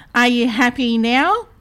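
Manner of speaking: usual speaking voice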